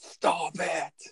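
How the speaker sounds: mild, high-pitched shout. Echoing the movie line after another speaker: impression of Arnold yelling. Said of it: "That was a good impression you did".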